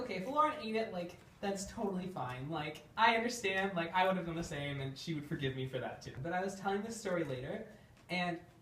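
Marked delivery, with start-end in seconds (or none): none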